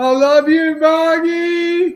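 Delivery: very high, loud yell at top of lungs, one word drawn out. Retelling yelling out while someone listens on the phone, retelling a yell at top of voice. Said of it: "on the top of my voice, I yell out".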